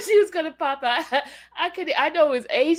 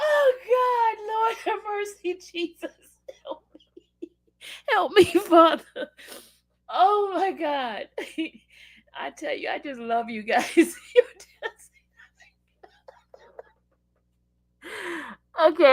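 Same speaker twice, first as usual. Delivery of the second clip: speech broken by laughter. Talking to the group after a barbecue joke, laughing while talking. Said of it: "I need to stop laughing".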